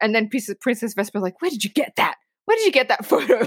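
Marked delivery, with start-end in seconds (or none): 1.4-3.5 angry, pissed-off, indignant, pitched-up voice. Retelling a movie scene where the princess's photo is shown: imitating an angry Princess Vespa. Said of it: "she's just pissed".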